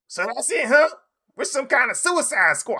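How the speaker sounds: raspy, very high, loud, booming rant. Imitating Chris Rock saying a line: super loud raspy Chris Rock voice. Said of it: "in his super loud, raspy voice".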